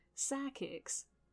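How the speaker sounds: Southern American accent. Showing how psychics sounds like sidekicks, in a Southern accent. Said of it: "when you say it in a southern accent, it's like".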